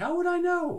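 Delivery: very high, very loud cartoon voice. Answering a question about corporate strategy in Dilbert voice. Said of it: "That's my Dilbert voice".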